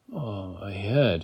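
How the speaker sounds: quiet, hoarse, barely voiced croak. [name], in pain, speaks to Kate: croaked. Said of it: "he croaked".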